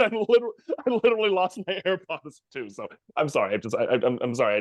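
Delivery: words broken up by laughter. Apologizing for losing composure, laughing while talking. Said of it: "I'm laughing so hard".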